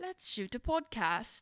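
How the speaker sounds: quick, soft attempt at a British accent. Speaker practices a line to test their British accent, British accent. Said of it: "something to say in a British accent".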